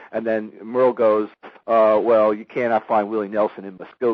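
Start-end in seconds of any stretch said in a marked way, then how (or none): none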